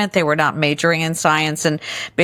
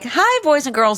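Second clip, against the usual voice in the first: very high, corny, patronizing talking-down voice; 9 semitones higher than usual. Retelling how scientists greeted the camera: imitating a corny condescending voice. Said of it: "turn on this really corny, horrible, uh, condescending voice".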